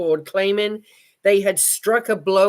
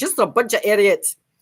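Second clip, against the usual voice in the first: put-on Scottish accent throughout. Rereading a quoted line the way its writer might say it: Scottish accent. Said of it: "I can hear his voice saying this with a Scottish accent".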